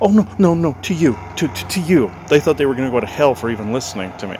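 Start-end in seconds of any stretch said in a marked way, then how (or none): 0.0-2.1 very fearful, stammering, high, frightened, raised voice. Retelling how someone reacted to hearing about Jesus: imitating a very fearful voice. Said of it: "in a very fearful voice said".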